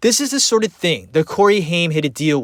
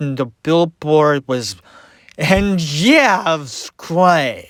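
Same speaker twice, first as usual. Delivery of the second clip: put-on slurred speech. Retelling how a man talked in an interview, imitating slurred speech. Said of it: "he just talked like this".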